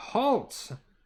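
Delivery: very high, commanding voice, called out. Voicing a man who steps out of hiding: yelled command. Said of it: "is going to yell".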